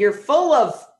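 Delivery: ordinary delivery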